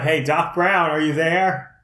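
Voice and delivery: loud, yelled-out call. In a role-play game, a player calls out after the kiss, yelling out. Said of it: "Now I yell out".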